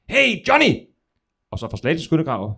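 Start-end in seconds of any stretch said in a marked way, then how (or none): 0.1-0.7 mock very high shout carrying across a distance. Retelling a joke, a soldier calls across from the trench: shouting from a trench. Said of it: "så lyder det så fra Næstveds".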